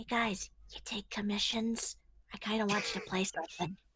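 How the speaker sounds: hushed, whispered voice. A character going over to the band to ask something, whispering. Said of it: "start whispering like".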